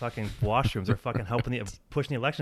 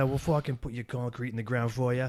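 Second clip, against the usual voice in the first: put-on New York accent, construction-worker style. Describing a bunch of guys with accents, in a put-on New York accent. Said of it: "get New York accents".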